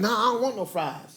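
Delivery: sassy, attitude-filled, flat no. Retelling her refusal of fries at McDonald's to her face, mimicking her attitude. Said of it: "why you gotta say it with an attitude?".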